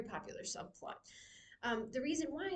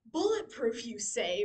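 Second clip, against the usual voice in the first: very loud, sarcastic delivery; 8 dB louder than usual. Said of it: "a lot of sarcastic comments".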